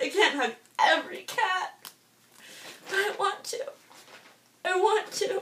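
tearful speech, crying while talking. In a first YouTube video about loving cats, crying while talking. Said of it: "I promised myself I wouldn't cry".

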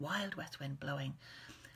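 ordinary delivery

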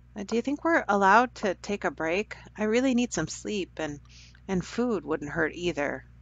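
ordinary delivery

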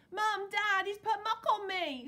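very high, very loud, shrill, drawn-out wailing. Narrator voicing a girl calling to her parents, wailing. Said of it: "she wailed".

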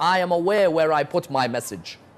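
plain

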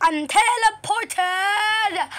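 thrilled, high-pitched excited shout. Reacting to getting teleported at the start of a round: excited shouting. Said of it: "sorry for me shouting right there".

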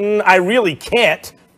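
ordinary delivery

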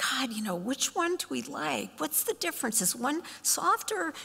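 high, puzzled, thoughtful musing. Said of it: "kinda standing there lost in thought going".

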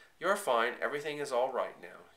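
ordinary delivery

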